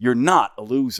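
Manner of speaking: sarcastic manner, acted out. Retelling a movie scene, quoting the hero's fiancée, mock-sarcastic. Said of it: "in like sort of this sarcastic way".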